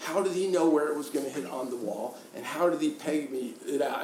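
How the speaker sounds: ordinary delivery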